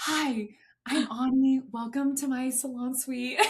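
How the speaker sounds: put-on whisper. Acting out greeting clients in the salon suite: imitating own past whisper. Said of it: "I was whispering in my suite".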